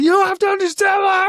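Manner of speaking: play-acted, very high, frantic screaming. Retelling a Terminator scene where Reese yells exposition at Linda Hamilton, imitating Reese screaming. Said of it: "Reese is like screaming in Linda Hamilton's ear".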